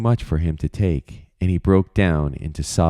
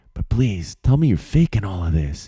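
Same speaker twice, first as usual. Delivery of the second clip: whispering confidentially, secretive. Reading a story, a character begs a friend in secret: whispering confidentially. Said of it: "he whispered confidentially".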